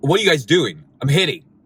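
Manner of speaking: all worked up, angry, challenging, confrontational tone. Retelling a tennis court dispute: imitating someone angry. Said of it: "comes back all angry".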